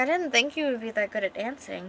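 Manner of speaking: plain reading voice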